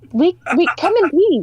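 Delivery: very high-pitched alien voice. Voicing a character reassuring soldiers: Mars Attacks alien voice. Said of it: "Is this Mars Attack style?".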